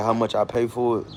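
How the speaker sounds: plain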